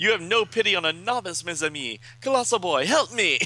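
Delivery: bad fake French accent. Voicing a character at a Dungeons and Dragons game, in a bad French accent. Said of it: "My bad French accent".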